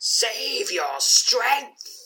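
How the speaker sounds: shrill, very high, full-volume ghostly undead howl. A narrator voices a gruesome spirit appearing before the listener, howling. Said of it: "Howls the gruesome spirit".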